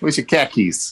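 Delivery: put-on Boston accent. Showing how a Boston meme says car keys: Boston accent. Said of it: "but in Boston, khakis are these".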